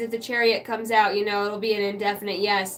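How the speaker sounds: normal talking voice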